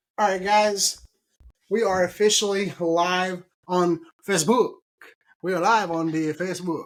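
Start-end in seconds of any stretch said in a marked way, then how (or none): 5.4-6.9 English words in a put-on Italian accent. Going live on Facebook, the host announces it to the viewers: Italian accent. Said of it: "that's my Italian accent".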